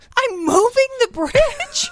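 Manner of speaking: very high, slow, baffled incredulous squeak.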